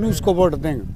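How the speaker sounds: ordinary talk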